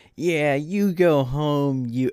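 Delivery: mock jeering heckler's yell, high and drawn out. Retelling how a West Virginia fan yelled at his dad leaving; imitating a fan yelling. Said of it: "starts yelling at him".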